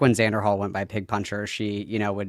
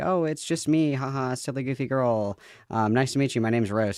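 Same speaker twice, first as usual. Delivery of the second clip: put-on sweet, harmless, innocent silly-girl voice; 4 semitones higher than usual. Retelling how she acts when joining new communities: imitating her playing innocent. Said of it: "she's like".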